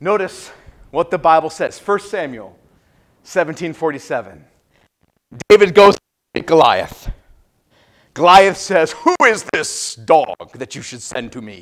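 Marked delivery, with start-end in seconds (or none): 8.9-11.6 very low, deep, put-on giant voice. Retelling the Bible story, the speaker quotes Goliath challenging David; Goliath accent. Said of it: "You got to have that accent".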